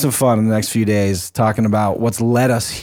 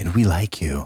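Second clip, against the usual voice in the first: deliberately unsettling, put-on creepy tone; 5 semitones lower, 5 dB quieter than usual. Thanking guests on air, jokingly adding a line in a put-on creepy tone. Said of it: "I did say it in a creepy way".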